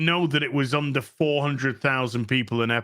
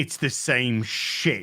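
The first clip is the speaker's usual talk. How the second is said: heavy stress on shit, rest light. Agreeing with George in conversation: stress on shit. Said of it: "the emphasis is on the word shit".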